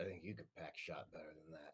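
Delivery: low, quiet, muttered under the breath. Speaking in character as an aside to Annie: said under breath. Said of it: "under my breath to Annie".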